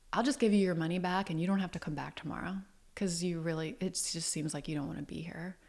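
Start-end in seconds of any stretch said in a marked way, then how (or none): none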